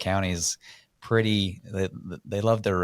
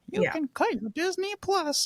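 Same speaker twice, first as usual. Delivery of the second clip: mock condescending tone, higher; 3 dB quieter than usual. Imitating a politician's advice on saving money: imitating a condescending tone. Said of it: "she's super condescending".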